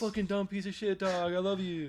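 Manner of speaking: cheerful, high, happy sing-song voice. Showing how mean words sound to a dog, in a happy tone to a dog. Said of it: "in a happy tone to a dog".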